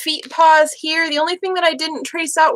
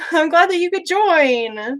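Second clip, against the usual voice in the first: delighted, eager tone, the word "join" drawn out; 2 semitones higher than usual. Speaker welcoming someone who just joined; excited, high-pitched voice. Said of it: "how high pitched my voice got".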